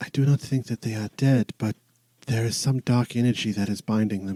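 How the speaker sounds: whispering god-like deity voice. Voicing a deity speaking in a character's mind: whispering deity voice. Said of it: "she sort of whispers in the back of your mind".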